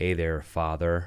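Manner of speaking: put-on, fake American accent. Retelling speaking to a priest behind the screen: put-on American accent. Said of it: "I've put on an American accent".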